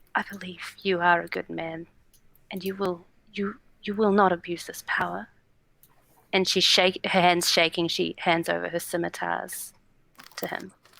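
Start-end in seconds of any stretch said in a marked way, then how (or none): 0.2-5.3 quiet, whispered delivery. A character steps forward and puts her trust in him, whispering. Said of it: "she just whispers".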